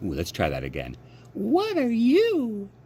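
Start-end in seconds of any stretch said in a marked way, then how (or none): 1.3-2.6 very high-pitched doll voice, stretched "you". Reading a story, the doll speaks to Edward the rabbit in a high-pitched voice. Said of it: "she said in a high-pitched voice".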